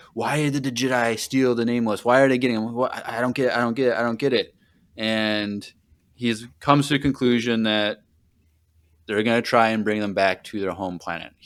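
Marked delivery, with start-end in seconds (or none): 0.2-4.6 put-on angry, outburst-like voice. Retelling a story scene where a character rages over a theft: imitating an angry character. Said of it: "he's super angry".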